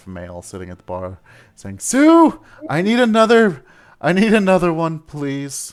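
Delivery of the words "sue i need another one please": sad, distraught, much higher, louder, slower. A dwarf at the bar slams it and calls for another drink, sad and almost distraught. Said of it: "Like sounding sad and almost distraught".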